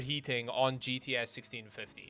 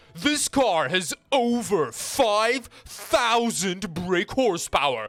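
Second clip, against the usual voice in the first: ridiculous exaggerated car-show drama, loud, slow, drawn-out; 6 semitones higher, 6 dB louder than usual. Saying an exciting car stat like Jeremy Clarkson: ridiculous Jeremy Clarkson voice. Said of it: "just say them in a ridiculous voice".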